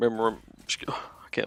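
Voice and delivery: choked-up voice breaking into a whisper.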